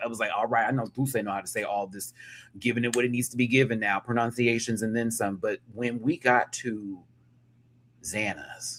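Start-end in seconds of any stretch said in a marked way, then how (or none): none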